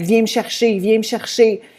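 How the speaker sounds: mock weepy, tearful begging in French. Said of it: "And she was just crying".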